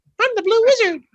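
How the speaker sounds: squeaky voice, pitched way up high. Mimicking the interviewee's voice change after the interview, in a Mickey Mouse voice. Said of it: "He's kind of like Mickey Mouse".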